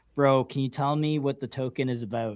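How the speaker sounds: usual speaking voice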